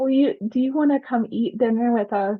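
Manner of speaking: mock sweet elderly woman voice. Retelling a little old lady coming up to them, in a sweet old lady voice. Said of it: "this cutest little old lady came up to me".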